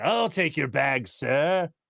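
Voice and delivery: slow, creepy, eerie horror-butler voice. Describing a haunting kid as the horror-movie guy: imitating creepy horror-movie servant. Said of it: "He's like".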